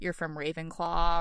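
ordinary talk, nothing marked

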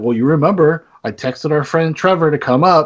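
normal talking voice

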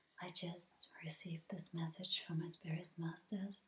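imitated very deep voice. Mocking people who make holy videos, imitating a very low voice. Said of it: "speaking in this very low voice".

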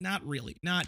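usual speaking voice

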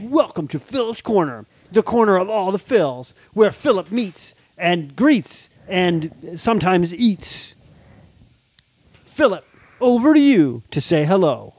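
put-on cartoon character voice. Opening the Philip's Corner segment, the dad hosts in a Ninja Turtles voice. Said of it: "This is too Ninja Turtles".

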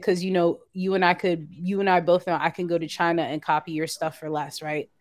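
plain

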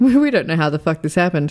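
plain

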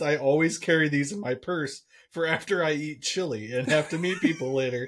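ordinary delivery

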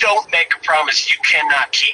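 acted, hard, forceful, threatening, aggressive tone. Retelling what a woman said to them, retelling an aggressive warning. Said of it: "went on further to say it more aggressively".

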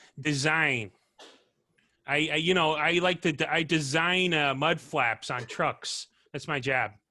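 put-on Chicago-style accent. Given a prompt word to set them off, the speaker does a Chicago accent. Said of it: "can I give you a word that sets you off onto a Chicago accent?".

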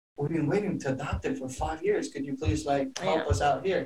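fed-up, frustrated, pleading tone. Retelling dad's plea to the immigration guy: imitating a frustrated plea. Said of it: "He was so frustrated".

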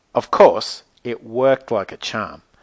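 ordinary delivery, nothing marked

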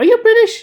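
high, loud, surprised tone. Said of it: "And he goes".

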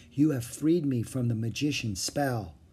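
ordinary delivery

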